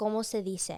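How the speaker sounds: ordinary delivery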